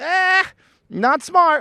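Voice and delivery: very high motherly voice, disapproving in tone. Voicing the half of your brain that is your mom, imitating mom's voice. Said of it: "your mom's voice and every woman in your life's voice going".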